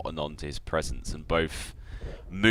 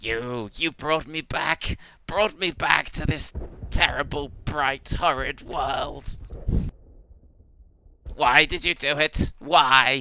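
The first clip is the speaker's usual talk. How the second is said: robotic alien voice, much higher, louder; 10 semitones higher, 4 dB louder than usual. In a role-play scene, a character accuses Krosek of bringing them back, sounding like a Dalek. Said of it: "You sound like a fucking Dalek".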